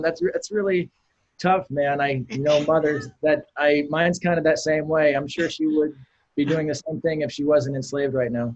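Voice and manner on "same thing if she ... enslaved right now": ordinary talk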